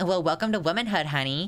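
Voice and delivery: high, silly, deliberately dumb put-on voice. Quoting what people tell her, in a really stupid put-on voice. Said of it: "I did it in a really stupid voice".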